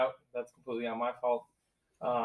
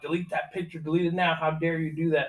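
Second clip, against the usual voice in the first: loud screaming with a demanding tone; 4 semitones higher, 4 dB louder than usual. Retelling a bouncer who screamed in his ear: imitating a bouncer screaming. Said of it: "he came screaming in my ear".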